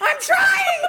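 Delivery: very loud, very high-pitched screaming. Retelling how he screamed back while being yelled at, retelling a scream back. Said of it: "we're screaming at each other".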